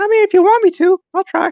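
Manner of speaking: squeaky, very high-pitched voice. Asked to do one voice before leaving, agreeing in a Mickey Mouse voice. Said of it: "Is that you trying to do like Mickey?".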